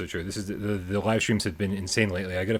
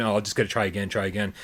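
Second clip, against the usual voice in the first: plain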